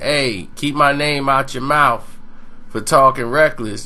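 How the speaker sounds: plain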